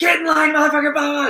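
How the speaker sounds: very loud, very high, shrill booming drill-sergeant scream. Recalling a drill instructor yelling at recruits getting off the bus: imitating a screaming drill instructor. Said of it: "just fucking screaming".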